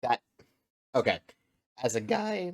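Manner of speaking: breaking voice, cracking mid-phrase. Introducing a modded game video, voice cracking. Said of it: "that voice crack".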